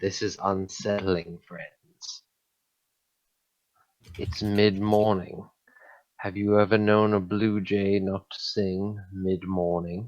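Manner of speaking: quiet, hushed murmuring stage whisper. Voicing a character who half-whispers to the party in a silent forest: quiet half-whisper. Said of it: "I quietly whisper to the rest of the party".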